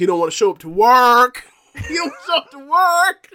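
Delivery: very high, very loud, shrill sing-song pitch swings. Complaining that a wrestler won't show up: Stephen A. Smith voice. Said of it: "using my Stephen A. Smith voice".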